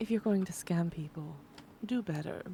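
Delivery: coy, seductive, alluring come-hither tone. A player's character leans on the table toward a man and speaks in a seductive tone. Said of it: "very kind of like seductively".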